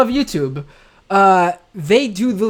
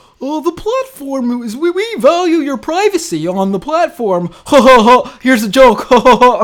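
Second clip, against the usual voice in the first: mocking, stiff, forced ha-ha laughs, voice raised in pitch; 5 semitones higher, 4 dB louder than usual. Acting out Mark Zuckerberg stepping on stage, in a mocking Mark Zuckerberg impression. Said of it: "steps on stage and goes".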